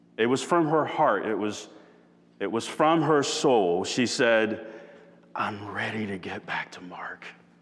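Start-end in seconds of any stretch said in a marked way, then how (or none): 5.4-7.3 mock yearning voice, much quieter. Retelling what she said to him, the speaker imitates her yearning voice. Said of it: "she said it in a yearning voice".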